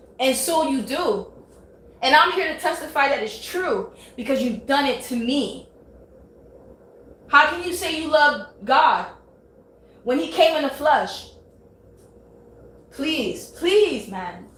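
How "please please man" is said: mock heartfelt, earnest begging plea. Testifying about things said to the speaker, pleading. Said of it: "I'm like literally pleading".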